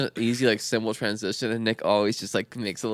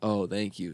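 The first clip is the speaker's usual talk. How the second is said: sarcastic, mocking thank you, quieter; 3 semitones lower, 4 dB quieter than usual. Acting out a skit about a door not held open: sarcastic thank you.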